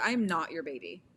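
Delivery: ordinary delivery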